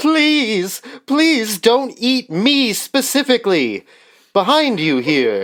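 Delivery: high-pitched shouting. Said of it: "I have him just shouting".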